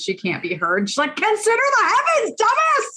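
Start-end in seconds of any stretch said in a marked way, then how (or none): 1.2-3.0 shrill, very high, shrieking yell. Retelling how Sapling yells at the monitor: imitating Sapling yelling. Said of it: "she's yelling at the monitor".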